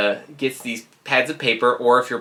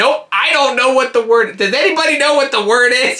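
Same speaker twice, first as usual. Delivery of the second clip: mock very high, loud, blurted top-of-the-lungs shout; 12 semitones higher, 5 dB louder than usual. Retelling a game night when a friend blurted out the answer: imitating Jordan shouting at full volume. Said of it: "at the top of her lungs".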